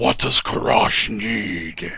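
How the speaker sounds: grand, theatrical, thunderous, booming voice. A game master voices a figure behind the door answering a knock, thunderous voice. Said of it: "you hear a very thunderous voice".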